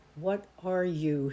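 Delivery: hissed low voice. Reading a novel, a man recoiling from a woman demands what she is, low hiss. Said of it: "he hissed in a low voice".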